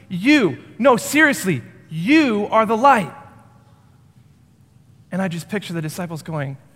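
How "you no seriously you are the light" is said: firm, emphatic delivery with strong stress. Retelling Jesus's words to the crowds: imitating an emphatic statement. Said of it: "he says it emphatically".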